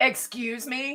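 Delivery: stern, reprimanding, scolding teacher voice. Showing how a teacher talks to someone who did something stupid: teacher voice. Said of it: "use the teacher voice on you".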